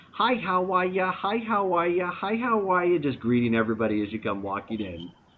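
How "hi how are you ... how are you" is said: friendly, high, welcoming greeter voice. Describing the scene to the group, voicing a greeter at the front door: little accent. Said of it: "saying in her little accent".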